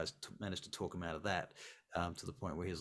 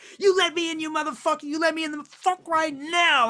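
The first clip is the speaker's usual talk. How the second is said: very loud, very high, shrill, furious raging scream; 18 dB louder than usual. Voicing a woman thrown out, banging on the door: screaming at someone. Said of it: "she starts screaming, banging on the door".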